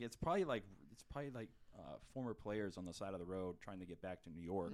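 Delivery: ordinary delivery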